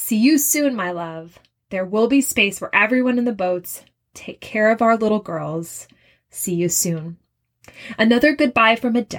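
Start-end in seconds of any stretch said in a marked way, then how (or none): none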